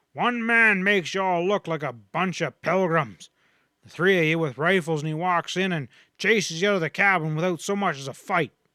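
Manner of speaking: loud, furious shouting tirade. Reading a story, one character shouts at the whole group in a loud, furious voice. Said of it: "But [name]'s voice, loud and furious, dominated the rest. / he shouted. / But [name]'s voice, loud and furious, dominated the rest. / who was still favoring his wounded arm".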